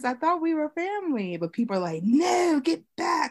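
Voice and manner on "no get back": high-pitched, hostile, angry crowd voice. Speaker retells people they thought were family shutting them out: put-on angry mob voice. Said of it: "That's how my angry mob voice".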